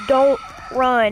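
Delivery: ordinary talk, nothing marked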